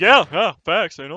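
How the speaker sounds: high loud sarcastic tone.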